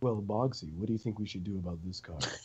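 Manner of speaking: smooth, deep and very soft voice. Retelling a conversation about a card, the speaker quotes Damon in his smooth voice. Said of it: "in his smooth voice".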